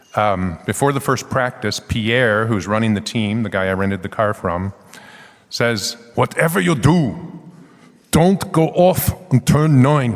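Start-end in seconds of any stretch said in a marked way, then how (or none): 6.1-10.1 clumsy, bad fake Austrian accent, slow drawl. Quoting the team boss Pierre's warning before practice, bad Schwarzenegger impression. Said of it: "Sounds like bad Schwarzenegger".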